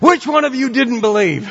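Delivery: furious, angry sputter. Retelling a man who sank and came out of the water, mock-angry sputter. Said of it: "angrily and came out of the water and sputtered".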